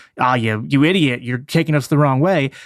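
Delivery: ordinary talk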